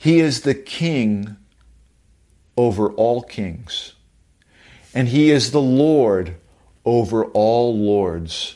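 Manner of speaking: slow, unhurried, slowed-down delivery. Preacher slows down a phrase so listeners hear it: saying it slower. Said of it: "I want to say it slower".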